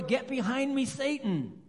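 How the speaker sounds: play-acted sudden, loud yell. Telling a joke set in a store, imitating someone yelling. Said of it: "she yelled out in the store".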